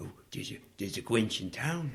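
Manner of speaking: quiet, garbled, mumbled delivery in a deliberately bad voice. Acting out how a listener might react, in a horrible Hubie voice. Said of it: "That was my Hubie voice. It was horrible".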